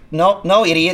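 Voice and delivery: ordinary talk, nothing marked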